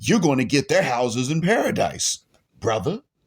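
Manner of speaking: dry, tongue-in-cheek, mocking sarcasm. Answering someone who walked away from the religion: sarcastic. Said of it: "I say that with sarcasm".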